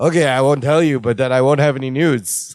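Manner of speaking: mock-deadpan, blank, flat delivery. Retelling how Bucky answered Larry's complaint, imitating Bucky's blank deadpan. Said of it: "Bucky blankly looks at him and goes".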